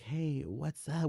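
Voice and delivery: drowsy, sleepy, just-woken voice. Retelling answering a phone call, the speaker mimics a sleepy voice. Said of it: "With the sleepy voice".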